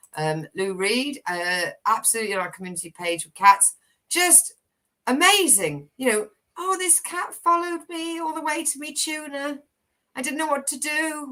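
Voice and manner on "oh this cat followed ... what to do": high-pitched cat voice. Sharing a post from the community page about cats, in a cat voice. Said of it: "Love the cat impression".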